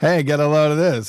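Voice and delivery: high-pitched borscht belt comedian voice. Showing how the joke should have been told, borscht belt comedian voice. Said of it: "you should have said it like that, like a real borscht belt comedian".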